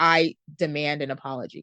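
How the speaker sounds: ordinary delivery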